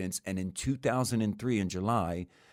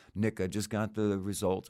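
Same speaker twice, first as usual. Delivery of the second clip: dry, expressionless, deadpan, flat monotone. Retelling a call from a lawyer with prison test results: imitating a deadpan lawyer. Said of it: "and this is all deadpan".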